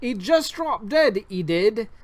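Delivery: put-on London street accent. Reading game dialogue written for it, in a Cockney accent. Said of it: "The game gives me no choice but to speak in a Cockney accent".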